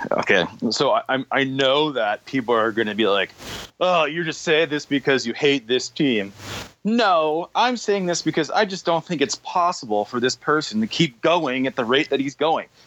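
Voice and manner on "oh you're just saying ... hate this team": ordinary delivery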